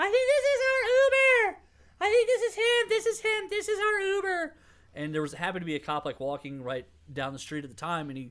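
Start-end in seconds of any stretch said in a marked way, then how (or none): 0.0-4.6 put-on very high, very loud, sloppy drunken shouting. Uber driver retelling a drunk passenger calling to her friend, imitating a drunk girl yelling. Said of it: "she's drunkenly yelling to her friend".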